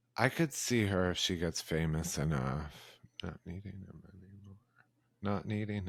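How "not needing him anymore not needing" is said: hushed, muttered under-the-breath mumble, secretive. Speaker adding a remark about her in conversation: mumbled very low. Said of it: "I just mumbled that so low".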